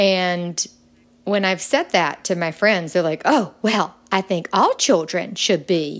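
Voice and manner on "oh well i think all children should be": put-on played-up Southern accent. Retelling what friends said about walking children home: imitating friends in a southern accent. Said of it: "this is my Southern accent coming out".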